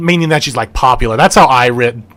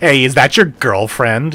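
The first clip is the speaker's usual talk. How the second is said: playful teasing, talking down. Showing how adults tease a young child: teasing a young child. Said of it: "tease the young child".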